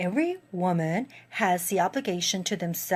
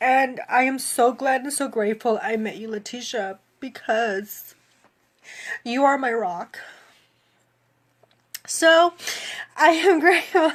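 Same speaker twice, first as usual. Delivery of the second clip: tearful voice, on the verge of crying; 4 semitones higher, 5 dB louder than usual. Thanking a coach in front of viewers, tearful voice. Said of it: "I don't mean to cry".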